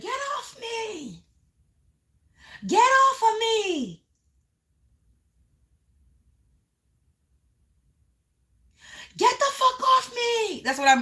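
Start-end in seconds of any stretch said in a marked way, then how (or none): 0.0-10.1 acted yell, higher. Describing a vision of someone held by police: imitating someone yelling. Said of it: "being held and they're yelling".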